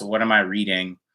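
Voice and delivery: ordinary talk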